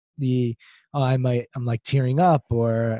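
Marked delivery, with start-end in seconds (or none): none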